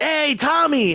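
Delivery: cheery, high, bright voice.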